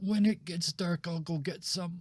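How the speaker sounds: tiny squeak of a voice, very high. Narrating a scene, the speaker voices a character who freezes, in a very tiny voice. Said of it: "in a very tiny voice".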